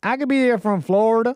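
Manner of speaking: Savannah-style accent. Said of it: "the Savannah accent".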